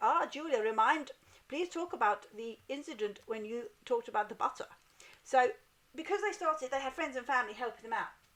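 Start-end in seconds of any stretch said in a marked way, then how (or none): 0.0-4.7 English with a put-on German accent. Reading out a friend's message, imitating a German accent. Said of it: "this accent I'm doing, because she's German".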